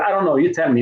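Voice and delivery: plain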